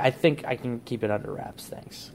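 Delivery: plain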